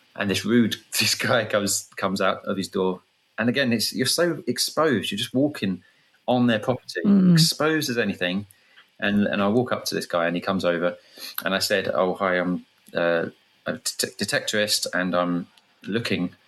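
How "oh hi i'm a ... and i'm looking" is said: ordinary talk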